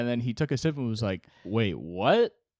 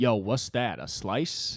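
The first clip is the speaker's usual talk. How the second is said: put-on Bronx accent. Retelling a waitress answering a customer's order, imitating a Bronx accent. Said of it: "talked like she was from the Bronx".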